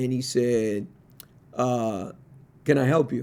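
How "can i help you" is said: imitated very dry man's voice. Retelling a phone call answered by a man, imitating a very dry voice. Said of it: "a man, very dry".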